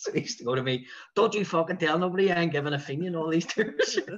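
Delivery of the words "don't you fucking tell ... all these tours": put-on loud, thick, broad Belfast accent. Retelling what a man from a bus company used to say to you, in a broad Belfast accent. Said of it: "he had the broadest Belfast accent".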